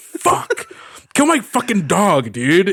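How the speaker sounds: play-acted exasperated outburst, drawn-out and swooping. Showing what gets said when losing at a video game: imitating being upset. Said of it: "if I was upset".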